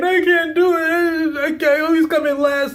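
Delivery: tearful, high, sobbing, crying complaint. Retelling how a young swimmer told her grandmother she always loses: imitating someone sobbing. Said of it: "she's sobbing. She's, like, crying".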